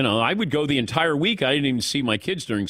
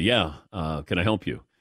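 lowered, deeper voice; 8 semitones lower than usual. Retelling answering the door to boys who show up: deeper voice. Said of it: "I gotta get the deeper voice there".

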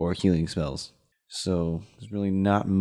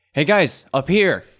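very loud, high holler; 8 semitones higher, 8 dB louder than usual. Calling up to the other guys several hundred feet away: in-character yell. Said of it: "so I'm just gonna yell".

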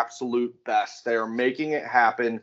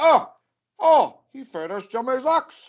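bad put-on Irish leprechaun accent, much higher; 13 semitones higher, 4 dB louder than usual. Retelling a truck ride, quoting a friend in a bad Irish accent as Steve. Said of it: "Are you riding with a leprechaun?".

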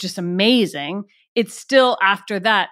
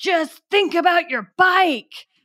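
mock, very high, sharp shout; 10 semitones higher than usual. Retelling how the director shouted on set: imitating Richard Benjamin shouting. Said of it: "he started shouting".

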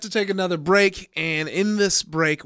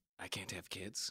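put-on gruff voice; 9 semitones lower, 23 dB quieter than usual. Acting out Geralt being told he can't have kids: Geralt voice. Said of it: "You went right to the voice to do it".

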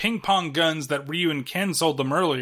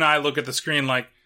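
ordinary talk, nothing marked

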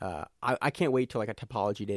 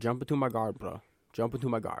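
put-on Finnish accent. Quoting a fighter's invite to come into his guard, in a Finnish accent. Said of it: "You don't like my Finnish accent".

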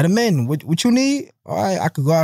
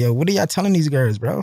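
plain

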